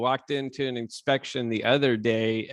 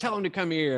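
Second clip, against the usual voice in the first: high-pitched, loud, shouted voice; 7 semitones higher than usual. Retelling how a homeowner yelled about roofers: imitating someone yelling. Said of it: "and he's yelling".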